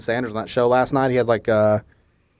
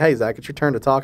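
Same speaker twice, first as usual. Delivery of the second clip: ordinary talk, nothing marked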